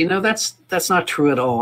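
ordinary delivery

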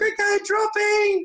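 put-on very high, slow, calling little-kid voice.

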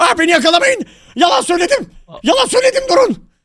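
high, loud, panicked, desperate pleading tone.

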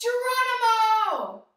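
loud, high-pitched yell. Pretending to jump from an airplane while skydiving: yell. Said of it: "we're gonna yell".

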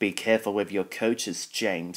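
plain reading voice

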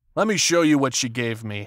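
ordinary delivery

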